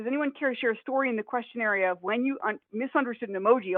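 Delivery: plain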